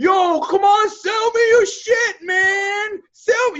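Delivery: very high, slow, pleading desperate screaming. Critiquing an ad, acting out a desperate buyer, screaming desperately. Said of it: "You're like screaming at people now".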